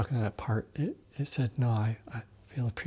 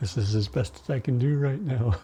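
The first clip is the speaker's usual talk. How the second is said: ordinary talk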